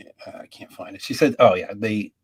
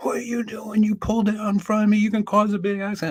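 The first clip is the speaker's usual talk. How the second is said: mock-flustered, agitated voice, much higher; 14 semitones higher than usual. Speaker retells an officer's reaction to a near-accident, reenacting him as agitated. imitating a flustered cop. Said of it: "My mother started crying".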